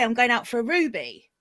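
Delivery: normal talking voice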